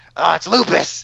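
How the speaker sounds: put-on American accent, TV doctor style. Imitating an actor in his American TV role: Hugh Laurie as House. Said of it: "When you watch Hugh Laurie, like, he's like".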